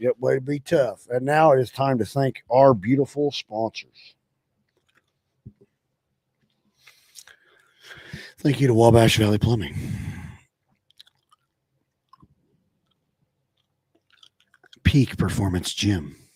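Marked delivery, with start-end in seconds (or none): 1.1-16.1 gentle, sweet toned-down voice, lower and quieter. Thanking the sponsors, trying a new voice: sweet, not over the top. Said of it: "That was very, like, sweet".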